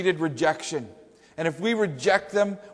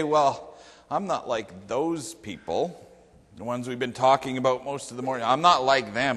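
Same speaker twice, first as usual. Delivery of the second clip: low, smug, superior, self-satisfied holier-than-thou tone; 5 semitones lower than usual. Acting out what smug readers might say, mock-smug. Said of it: "smugly say".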